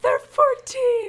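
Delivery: high, slow, loud screaming.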